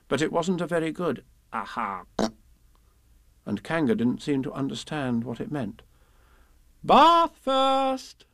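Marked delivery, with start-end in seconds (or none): 6.8-8.1 cheerful, slightly high-pitched voice. Narrator reading a story, Kanga speaking to Piglet, in Kanga's cheerful voice. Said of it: "said Kanga in a cheerful voice".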